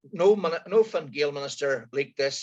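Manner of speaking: usual speaking voice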